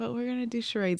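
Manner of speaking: put-on soft, high, sweet little kid voice. A mother retells her child asking for charades at bedtime, imitating Maddox's sweet little voice. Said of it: "in his sweet little voice".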